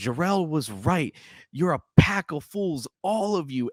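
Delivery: raging, furious yell, pitched high. Act out the man confronting the council, acting out him yelling. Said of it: "he's yelling at the council".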